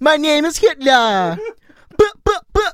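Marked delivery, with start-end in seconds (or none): 0.0-1.4 put-on Jamaican accent, drawn way out, very slow. Joking after someone's unplaceable accent that it usually goes to Jamaican, use a fake Jamaican accent. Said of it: "you would do a Hitler quote in a Jamaican accent".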